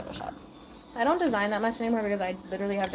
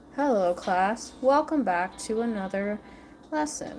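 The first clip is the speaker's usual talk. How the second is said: lifeless, low-energy, bored lecturer voice. Imitating a boring teacher opening a late-night class: imitating a monotone teacher. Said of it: "he had such a monotone voice. ... He talked like this".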